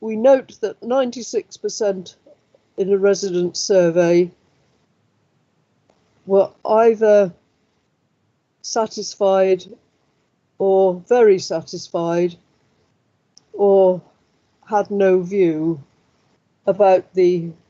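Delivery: slow, deliberate dictation pace. Dictating a summary so another person can write it down, speaking slowly for dictation. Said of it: "Saying it slowly so Neil can write it down".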